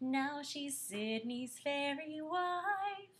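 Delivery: very slow, drawn-out, playful teasing. Showing a performer how to say the line: teasing. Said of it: "say it like you're kinda teasing her".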